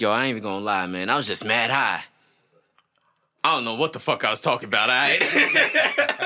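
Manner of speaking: animated delivery with widely swinging pitch. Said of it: "And he's like".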